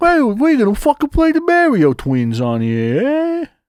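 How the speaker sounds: very high, swooping, put-on New York accent. Retelling what a guy said about playing mario, imitating a new york accent. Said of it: "New York accent".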